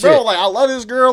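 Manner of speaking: really upset, complaining outburst. Retelling complaining on stream about a girlfriend: imitating own upset complaining. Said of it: "I'm really upset right now".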